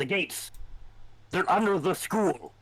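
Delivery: strained, tight, desperate, high voice. Voicing Nikolai over shouting and explosions as the narrator, tight with desperation. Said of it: "his voice is tight with desperation".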